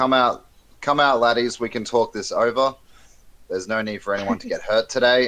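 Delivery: high-pitched loud yelling. Player's dwarf character calls out to the trees, yelling out. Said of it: "and I yell out to the trees".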